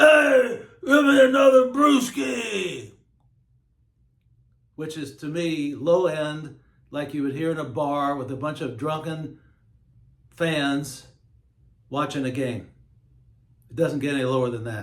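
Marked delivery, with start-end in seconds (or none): 0.0-2.9 high, loud yelling voice. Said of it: "the guys would yell".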